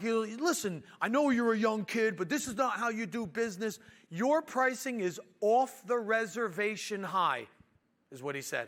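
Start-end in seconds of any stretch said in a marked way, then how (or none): 0.0-7.5 furious, angry, pitched-up voice. Retelling a man holding the contract scolding a young kid, imitating a furious man. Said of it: "The guy was furious".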